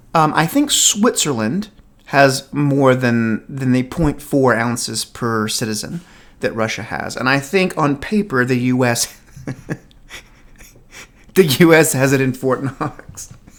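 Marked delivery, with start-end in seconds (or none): 8.5-13.4 words breaking into laughter while speaking. Explaining gold reserves on paper, laughing while talking. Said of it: "I can't stop laughing".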